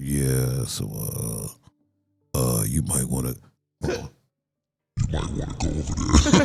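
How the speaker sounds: very deep bass, slow, halting, hesitant, rising voice. Imitating a gaming friend's voice while explaining how deep it is: imitating Jay's deep voice. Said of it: "'cause his voice is like".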